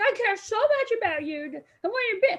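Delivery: high-pitched, furious, angry screaming. Recalling a man who started screaming at him, retelling a man's angry screaming. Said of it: "he starts screaming at me".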